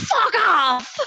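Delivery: put-on, crazed, demented screaming yell. Retelling a classmate screaming at bullies: imitating demented screaming. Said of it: "started screaming at them in a really demented fashion".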